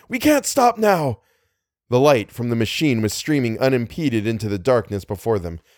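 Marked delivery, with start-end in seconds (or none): 0.1-1.2 very high, sharp, alarmed and slow. A man in a speeding car answers his companion's warning; sharp with alarm. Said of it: "his voice sharp with alarm".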